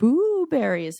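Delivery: high, eerie, spooky ghost voice. Telling a ghost joke at the campfire: spooky voice. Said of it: "the spooky one".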